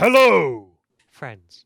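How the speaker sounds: very loud, swooping bird-folk creature voice. Voicing a Kenku who drops from the sky and bows: Kenku voice. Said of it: "He says".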